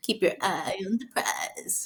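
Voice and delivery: put-on breathy celebrity voice, breathed-out whisper. Talking about someone eyeing the prize, line in Lori Harvey voice. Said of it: "Like in my Lori Harvey voice".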